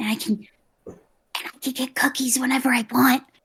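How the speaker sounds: hushed, conspiratorial aside, like letting slip secret. Answering a question about living with her dad now, conspiratorially. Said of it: "she says that conspiratorially, like it's kind of a secret".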